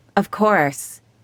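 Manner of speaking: usual speaking voice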